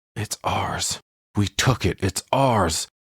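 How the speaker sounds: slow stage whisper, words repeated. Retelling a movie scene where a character whispers to himself: imitating someone whispering. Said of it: "he's whispering to himself".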